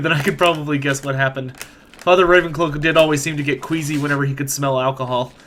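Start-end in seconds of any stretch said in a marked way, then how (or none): none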